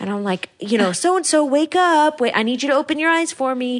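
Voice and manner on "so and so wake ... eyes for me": acted-out yell, much higher pitch. Recalling trying to wake a dreaming woman, retelling yelling her name. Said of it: "I'm like yelling her name".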